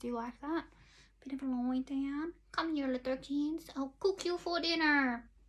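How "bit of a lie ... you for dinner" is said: put-on fairy-tale witch character voice. During a makeup tutorial, the speaker tries out a voice for viewers, witch voice. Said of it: "That could be my witch's voice".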